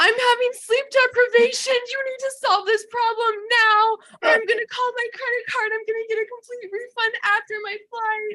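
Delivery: put-on tearful voice. Retelling a phone call to the airline about a problem: imitating own past crying.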